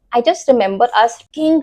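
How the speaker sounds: usual speaking voice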